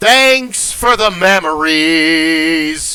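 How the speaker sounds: loud, slow, long drawn-out holler. Retelling shouting a joke from the catwalk at a crowd: imitating own past yell. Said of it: "and I yell out".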